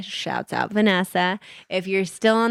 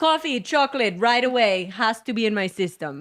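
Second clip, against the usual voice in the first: imitated German accent; 3 semitones higher than usual. Quoting people who went to the bakery every day, imitating a German accent. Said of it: "really good accent".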